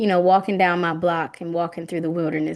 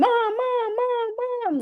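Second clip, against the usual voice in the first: very high, long-stretched, drawn-out shouting. Retelling how she reacted to a fox, imitating her shouting. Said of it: "she just randomly starts shouting".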